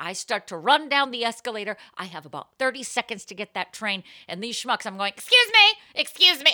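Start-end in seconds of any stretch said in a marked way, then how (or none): 5.2-6.5 mock very high, very loud, shrill furious voice. Retelling pushing down an escalator past people: imitating an angry "excuse me". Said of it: "I'm doing the angry excuse".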